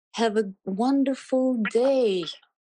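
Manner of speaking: put-on acted warm old lady voice. Retelling what a woman said after touching the speaker's hand, imitating a pleasant kind voice. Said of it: "with very pleasant and kind voice".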